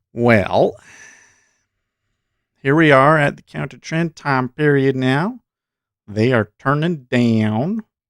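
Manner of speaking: southern American accent, stretched, drawn-out vowels. Discussing a market trend, the speaker slips into a southern accent. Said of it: "I don't know why I'm talking with the southern accent".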